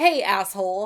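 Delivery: cheeky, sassy, mouthy tone. Voicing a woman in a picture, hands on hips: mock mouthing off. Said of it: "She looks like she's mouthing off to someone".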